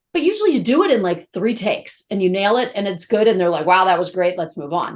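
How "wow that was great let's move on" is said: normal talking voice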